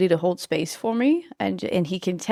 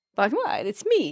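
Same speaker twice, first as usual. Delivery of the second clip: put-on heavy Spanish accent with imperfect, broken English; 4 semitones higher than usual. Retelling what a man replied when she admitted being nervous; thick Spanish accent. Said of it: "In his like thick Spanish accent".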